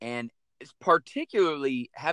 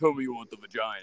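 deep, lowered, manly voice; 3 semitones lower than usual. Retelling what she said to him, in a manly deep Batman voice. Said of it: "In like a manly type voice like that".

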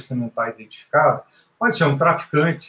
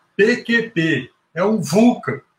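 play-acted high shout, very slowly stretched out; 7 semitones higher than usual. Telling an aviation story, the speaker acts out a man turning and shouting. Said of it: "gritando mesmo".

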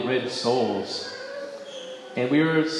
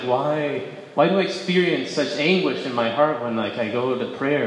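ordinary delivery

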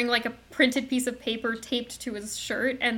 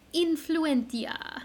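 put-on Italian accent on the word; 4 semitones higher, 3 dB quieter than usual. Giving the Italian source word of influenza: best Italian accent. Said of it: "I'm going to do my best Italian accent here".

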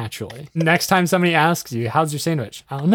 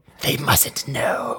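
put-on creepy creature voice; 3 semitones lower, 5 dB quieter than usual. Trying out a different tone of voice for an idea, creepy Gollum voice. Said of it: "like a creepy Gollum kind of accent".

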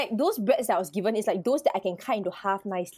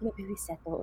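put-on whisper, quieter; 11 dB quieter than usual. Retelling what the waiter said about the bill: imitating a whisper. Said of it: "he whispered".

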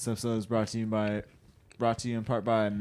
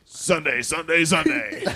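very loud, booming, high radio ad announcer voice; 7 semitones higher, 9 dB louder than usual. Asked by the others to lead them out, he does the radio announcer voice. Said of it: "Do the radio voice".

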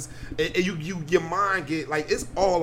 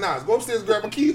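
normal talking voice

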